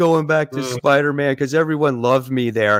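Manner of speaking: put-on crying voice. Imitating a comic writer crying that he wants to go back: mock crying as Bendis. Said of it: "He's crying. He's going".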